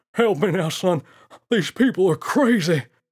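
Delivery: high, very loud, wheezy ape voice. Narrating a story, a chased gorilla calls to the boy for help; wheezing ape. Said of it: "the naughty ape wheezed".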